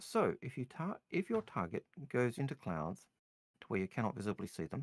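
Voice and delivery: plain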